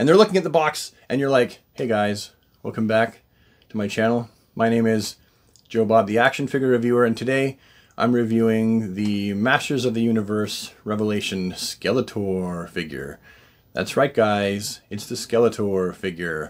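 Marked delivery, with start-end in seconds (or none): 1.7-16.5 flat, bored, low, slow monotone drone. Demonstrating a typical action-figure reviewer's intro: boring monotone Joe Bob voice. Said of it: "It's all monotone".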